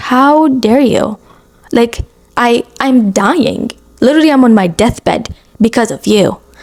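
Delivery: slow, furious, indignant, livid outburst. Retelling own words on hearing who caused the illness: retelling a livid outburst. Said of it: "I am livid".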